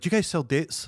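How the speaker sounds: put-on flustered, anxious, almost panicked delivery. Retelling a fasting girl who came in behind the speaker, imitating a panicked question. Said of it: "a panic almost".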